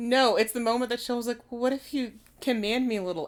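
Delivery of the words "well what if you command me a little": small, quavering, trembly little voice. Retelling a scene from a story, voicing Shell: Shell's trembly little voice. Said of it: "in his trembly little, like, voice".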